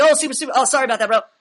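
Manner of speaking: high, rushed, flustered, nervous, gushing, over-apologetic. Describing a man who speaks fast and slips up, imitating someone over-apologizing. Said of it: "Like super apologetic".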